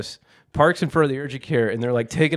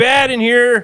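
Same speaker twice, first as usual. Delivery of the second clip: very high, very loud, shrill, drawn-out yell; 11 semitones higher, 8 dB louder than usual. Retelling a kitchen knife cut, calling to his wife: imitating himself yelling. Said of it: "yelling to my wife".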